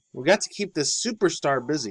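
plain

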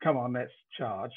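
ordinary talk

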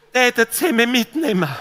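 mock weepy, whimpering, whiny, tearful tone. Imitating a Swabian hitchhiker asking for a ride, mock-whiny, tearful hitchhiker. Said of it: "das kommt immer so weinerlich".

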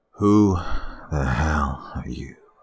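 icy, cold, slow delivery. Reading a story, a gunman questions the narrator: cold tone. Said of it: "He asked in a cold tone".

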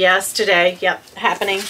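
ordinary talk, nothing marked

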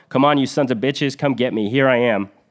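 taunting yell, lightly sketched. Recounting a man firing a machine gun at oncoming troops, retelling someone yelling. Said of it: "he yells".

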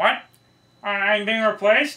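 very high frog puppet voice. Voicing the Kermit puppet talking back to its maker: Kermit the Frog voice. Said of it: "conversation with, with, uh, with, with Kermit".

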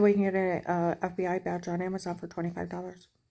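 ordinary delivery

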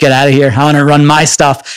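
usual speaking voice

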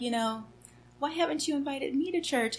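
tiny, sweet, small, soft, high little voice. Retelling what a woman asked one day, imitating her little voice. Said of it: "she had gotten this little voice".

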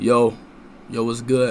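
acted low masculine voice. Asked to do a deep voice, trying to sound like a man. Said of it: "this is my D voice. Let me know if I sound like a man".

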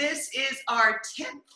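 a little choked up, voice catching, slightly high. Opening the final lesson of a ten-week course, choked up. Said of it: "I got a little choked up".

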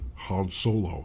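very low, distorted voice, as if through smoke. Demonstrating talking with vapor in the mouth, in a Kylo Ren voice. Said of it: "Say something like".

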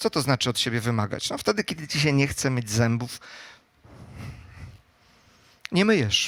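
soft, dry, tongue-in-cheek sarcasm. Talking to an audience about demanding things of oneself, sarcastic. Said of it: "że mówię z przekąsem".

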